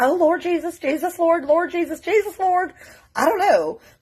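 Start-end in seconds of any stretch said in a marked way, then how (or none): 0.0-2.7 high, shocked, panicked woman's voice. Retelling a shocked religious lady praying: imitating a shocked woman praying. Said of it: "maybe it was the wife".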